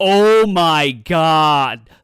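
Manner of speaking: very loud, excited exclamation, "God" drawn out. Retelling a reaction to a game reveal: retelling a super loud exclamation. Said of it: "super loud".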